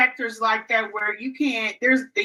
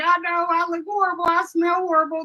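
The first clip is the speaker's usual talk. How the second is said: mock tearful, upset, high crying voice; 7 semitones higher than usual. Retelling own words to a son at the airport, imitating own past crying. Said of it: "I was, like, crying".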